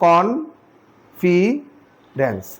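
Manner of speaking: "confidence" very slow, each syllable set apart.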